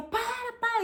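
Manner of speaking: put-on, breathless, very high laughing yell. Retelling herself under the shower shouting while laughing: imitating own past laughing yell. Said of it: "gritando, rindo, rindo, perdendo fôlego".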